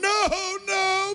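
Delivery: very high, crying, shouted mock anguished plea. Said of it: "I'm supposed to go".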